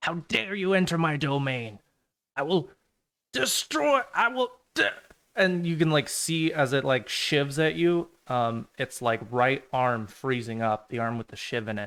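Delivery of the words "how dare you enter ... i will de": high, screeching, shrieking demon yell. Voicing a demon that appears and yells at the players: demon yelling. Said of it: "yell out to you".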